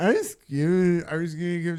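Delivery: put-on loud, sloppy drunk, fumbling, slurred rambling. Retelling a story about a lady at a baby shower: imitating a drunk woman. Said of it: "the lady's so drunk".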